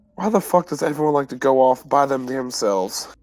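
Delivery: grumbled, under-the-breath mutter to oneself. A player's character heads downstairs holding a hat and dagger, muttering to oneself. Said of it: "muttering to myself".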